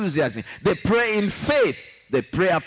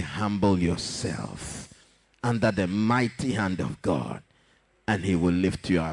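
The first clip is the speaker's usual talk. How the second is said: tender, gentle, kind voice, lower; 11 semitones lower, 5 dB quieter than usual. Showing how he would tell a sister to humble herself, tender, nice voice. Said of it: "I'll speak with a tender, nice voice".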